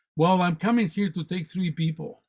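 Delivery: normal talking voice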